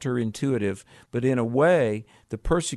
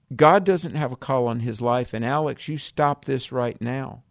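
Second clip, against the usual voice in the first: usual speaking voice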